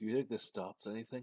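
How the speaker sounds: soft, hushed half-whisper, very close up. A handcuffed man being led in front of her leans in, half-whispering. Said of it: "he leans in and he whispers".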